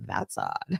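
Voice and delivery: sarcastic, dry, near-whispered aside. Showing the saying used to be sarcastic to somebody: sarcastic. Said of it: "trying to be sarcastic to somebody".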